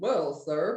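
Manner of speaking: very low, deep put-on man voice.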